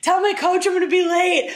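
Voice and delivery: shrill, very high, frantic, panicked yell. Recounting being hit by a car, speaker does a retelling of a panicked yell. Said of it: "I'm yelling".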